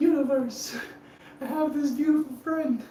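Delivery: high, gushing voice, projected upward. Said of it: "I was like".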